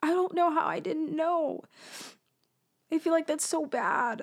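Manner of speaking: tearful, high-pitched crying through tears. Upset at the mark on the other person's arm, crying. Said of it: "I'm crying because I'm upset".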